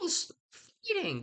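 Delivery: put-on high, slow, good little boy voice. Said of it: "Benvolio is like".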